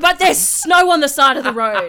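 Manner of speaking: put-on, thrilled, very loud excited shout. Speaker retells answering her husband on seeing snow, retelling her excited self. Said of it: "I was so excited".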